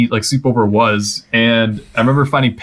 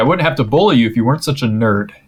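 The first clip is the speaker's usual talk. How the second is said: plain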